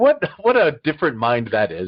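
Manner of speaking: ordinary talk, nothing marked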